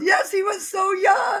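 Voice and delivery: very high, shrill, loud shout. Recounting a pretend funeral ritual as an executive chimes in, retelling an executive's shout. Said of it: "one of the executives shouts out".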